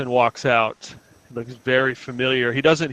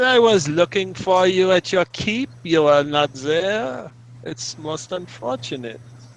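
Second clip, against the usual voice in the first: put-on high-pitched German accent; 6 semitones higher than usual. A character tells another they looked for them at their keep: German accent. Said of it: "this is supposed to be my German accent".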